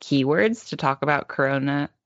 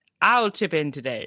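imitated grandpa voice. Retelling the grandpa repeating English phrases from videos: imitating Gong Gong practicing English. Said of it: "Gong Gong would be like".

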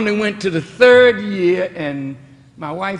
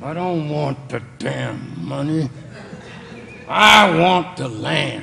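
play-acted, low, rough words forced through clenched jaw; 4 semitones lower than usual. Retelling how the farm's owner answered the payment, through gritted teeth. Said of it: "gritted his teeth".

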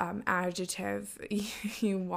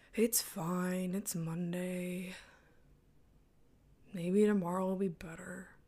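slow, unhurried put-on voice, every word dragged out. Acting out own reply to a coworker on a Monday: Eeyore voice. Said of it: "Sound like Eeyore from".

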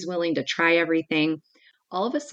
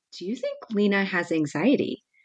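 very gentle, careful delivery; 3 semitones higher than usual. Retelling how a gymnastics instructor asked her about Lena, retelling a gentle question. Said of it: "she just very gently said".

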